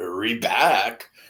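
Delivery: sarcastic, taunting, mocking, teasing tone. Explaining how he's mocking them, imitating a mocking tone. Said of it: "It's basically like he's like mocking them".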